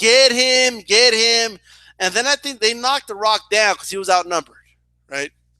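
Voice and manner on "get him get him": very slow, stretched-out, drawn-out screaming cheer. Retelling a fan cheering at a wrestling match: imitating someone screaming. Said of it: "She is screaming".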